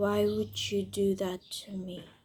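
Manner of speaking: frightening, low-toned, quiet, menacing anger. Example of anger in american english culture, low, frightening angry tone. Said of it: "the tone for anger could be very low and frightening".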